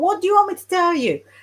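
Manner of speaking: shrill, very high shouting. Retelling how the psychic shouted down the phone at the person asking, retelling a shout. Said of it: "Sorry, I can't do an accent".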